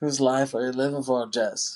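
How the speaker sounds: thick, heavy Irish brogue. Retelling a film scene where Joe questions Jess: Joe's thick Irish accent. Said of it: "with his accent".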